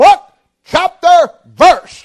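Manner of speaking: very loud, high, thunderous booming yell. Recalling his father yelling from the front row of a large crowd, retelling a booming yell. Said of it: "came a booming voice like the clock of thunder".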